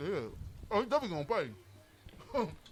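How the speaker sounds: talking with mouth full of food. On a show, a host answers co-hosts while talking with mouth full. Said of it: "you got a mouthful of chicken trying to talk".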